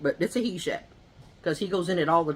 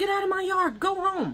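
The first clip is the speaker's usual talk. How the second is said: acted-out very high, high-pitched shout. Telling a story about a neighbor's dog in the yard, retelling a yell. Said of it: "I'm yelling at the dog".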